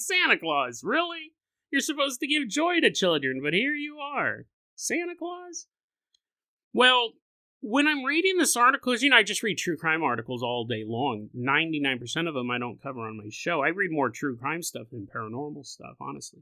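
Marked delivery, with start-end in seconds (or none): 0.0-5.7 very high, swooping sing-song voice pushed way up. Retelling a played audio clip, imitating Chris Hansen. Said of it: "He's like".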